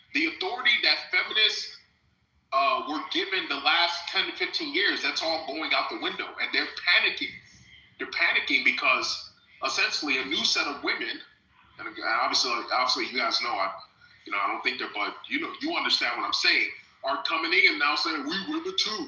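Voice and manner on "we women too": high-pitched, soft, mocking voice. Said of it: "That's how they sound".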